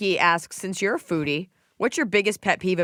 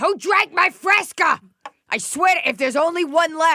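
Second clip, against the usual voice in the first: put-on booming, echoing yell, louder; 11 semitones higher, 5 dB louder than usual. Retelling what the dad shouted about the fresca: imitating dad's booming, echoing voice. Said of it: "I can still hear this booming, echoing".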